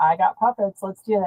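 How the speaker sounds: ordinary talk, nothing marked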